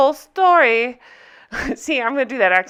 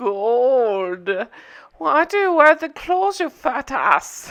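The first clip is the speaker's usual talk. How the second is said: put-on Scottish accent with "gold" long and drawn out. Recapping a show and imitating a girl's talk in a mock Scottish Austin Powers voice. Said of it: "cross into Austin Powers Gold member".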